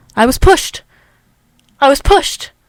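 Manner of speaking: loud, insistent injured man voice, repeating. Retelling what a man on a gurney kept repeating, imitating the man on the gurney. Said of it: "it's going to be my impression of him".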